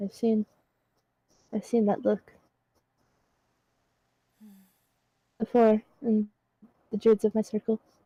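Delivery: softly spoken, quiet and hushed. A character steps forward to speak to another, quietly. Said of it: "just quietly says".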